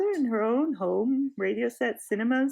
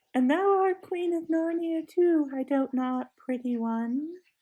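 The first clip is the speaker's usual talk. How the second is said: coaxing, wheedling, half-teasing, half-mocking witch voice; 4 semitones higher than usual. Narrator reads the witch's line to Jill: coaxing, half-mocking tone. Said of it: "said the witch in the same coaxing, half-mocking tone".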